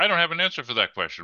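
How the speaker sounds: mock tone, rattled off high and fast.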